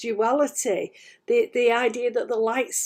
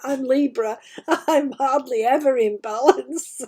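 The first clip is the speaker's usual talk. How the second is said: talking while breaking into laughter; 3 dB louder than usual. Giving an astrology forecast to listeners, laughing while talking. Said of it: "I'm laughing".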